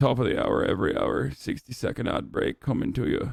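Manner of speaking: acted Irish accent, deep voice. Prompted to announce an ad break, in a deep Irish accent. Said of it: "Do the Irish accent in a deep voice".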